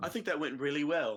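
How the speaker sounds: cheerful, upbeat tone. Speaking in character to the room after a threat: much happier tone. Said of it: "in a much happier tone".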